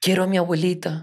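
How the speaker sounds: high voice, climbing. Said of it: "la voz cada vez más aguda".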